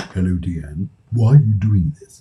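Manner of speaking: deep, low put-on spirit-world voice. Acting out the spirit world questioning the speaker, in a deep spirit-world voice. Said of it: "they speak in that voice, deep voice as well".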